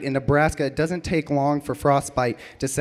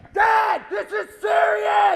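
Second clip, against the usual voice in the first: acted, breathless, very high-pitched voice. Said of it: "all out of breath".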